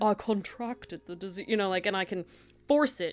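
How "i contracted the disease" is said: fake British accent, much quieter. Showing how opening the back of your throat changes a phrase, put-on British accent. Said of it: "I can be British and say".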